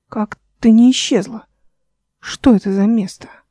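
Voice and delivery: ordinary talk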